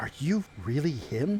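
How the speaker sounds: soft, secretive, hushed stage whisper, very close up. Narrator voices a man stepping into a hug and half-whispering in your ear, very low half-whisper. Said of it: "in a very low, whispered voice".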